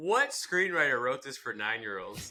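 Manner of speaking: ordinary talk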